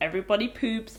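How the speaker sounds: ordinary delivery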